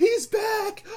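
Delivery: very high, slow, frantic screaming. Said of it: "he's screaming out in the crowd".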